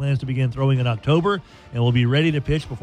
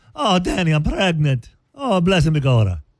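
laid-on stage Irish brogue with swooping pitch; 3 semitones higher than usual. Imitating the accent of Maggie O'Hooligan in Caddyshack: put-on Irish accent. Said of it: "you had to talk like this".

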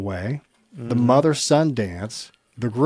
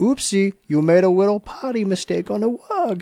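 put-on high, cutesy, doting baby talk; 8 semitones higher than usual. Showing how one talks to a cute doggy, in baby talk. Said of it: "Like this".

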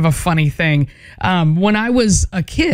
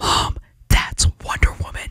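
put-on whisper, quieter. Retelling telling mom about wonder woman as a four-year-old: imitating own childhood whisper. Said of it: "I kept whispering to her".

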